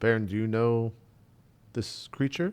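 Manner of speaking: speaking quietly. Player's character kneels beside baron and asks about a creature, speaking quietly. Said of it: "quietly say like".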